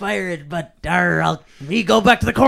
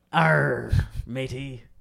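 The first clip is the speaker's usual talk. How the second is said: deep, put-on pirate voice; 6 semitones lower, 8 dB quieter than usual. Voicing a pirate character being introduced: pirate voice. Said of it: "let me introduce you to Pirate".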